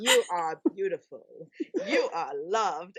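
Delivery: slow, dreamy, swooning Australian accent.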